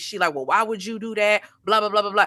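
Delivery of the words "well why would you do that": mock, put-on shaming tone. Retelling how a woman confronted a girl: imitating a shaming tone. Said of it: "then her tone changes".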